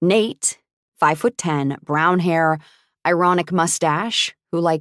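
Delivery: ordinary delivery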